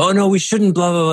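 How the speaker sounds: trembling, frightened voice, fast and high. Teaching about self-talk, demonstrating the inner voice as a trembly fearful voice. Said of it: "a sort of trembly fear sort of voice".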